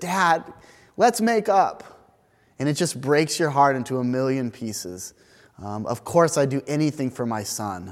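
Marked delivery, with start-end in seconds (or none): 0.0-1.8 put-on high, slow, tearful child voice. Retelling what a five-year-old son says to his dad: imitating a child speaking through tears. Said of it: "when he says through his tears".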